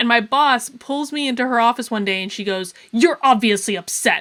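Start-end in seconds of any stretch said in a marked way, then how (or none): 2.9-4.2 put-on angry tone, louder. Retelling a boss's words in her office: imitating an angry tone. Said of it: "a really angry, like, tone of voice".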